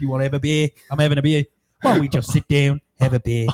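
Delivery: put-on Australian accent, laid on. Retelling what a drunk guy kept offering you: put-on australian accent. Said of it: "why you're doing like an Australian accent".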